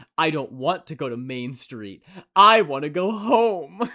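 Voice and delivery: acted sincere, heartfelt, earnest tone, home stretched out. Retelling a reply about the route home: imitating someone speaking earnestly. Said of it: "so earnestly says".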